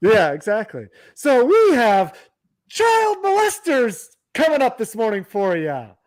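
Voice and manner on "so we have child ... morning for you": forced, fake cheerful, pitched-up sing-song delivery. Delivering bad news after being asked to say it happily: fake happy tone. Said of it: "say it like you're happy".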